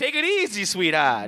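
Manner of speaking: street-tough Boston mobster accent, laid on thick. Admitting they can't do a Boston accent, except the Penguin's Boston accent. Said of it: "I can't do a Boston accent".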